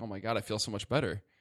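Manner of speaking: plain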